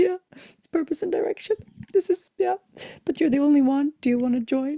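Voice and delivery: high-pitched, tearful speech, talking through tears. Retelling what they said to a late arrival, reenacting speaking while crying. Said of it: "And I'm crying".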